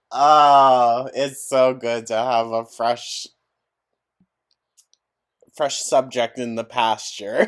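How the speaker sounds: loud, words breaking up with laughter. Speaker keeps cracking up mid-sentence and apologizes, laughing while talking. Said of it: "it's cracking me up like this".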